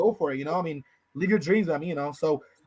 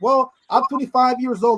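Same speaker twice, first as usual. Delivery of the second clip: slow, high, sarcastic smart-ass tone. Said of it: "I was being sarcastic, being a smart ass".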